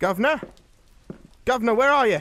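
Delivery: shouting out, high and loud. Searching for the governor, a character calls out for him, shouting. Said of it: "Stop shouting".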